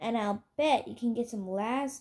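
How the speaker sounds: ordinary delivery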